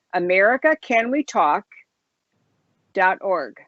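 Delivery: slow, carefully paced, deliberate, each word set apart. Repeating the website name slowly for listeners, slow and deliberate. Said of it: "so I'll say it slowly".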